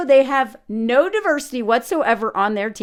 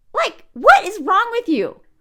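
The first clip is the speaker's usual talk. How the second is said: normal talking voice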